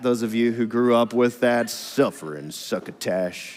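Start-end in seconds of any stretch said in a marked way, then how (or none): 1.7-3.6 whispered, muttering cartoon voice. Showing own complaining like Sylvester the cat: Sylvester the cat voice. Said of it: "You remember Sylvester the cat".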